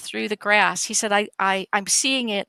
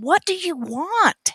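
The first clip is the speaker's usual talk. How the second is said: frustrated high yell, "want" drawn out; 8 semitones higher than usual. Retelling a man yelling at the creature out of frustration: imitating someone yelling. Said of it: "he just yells at him".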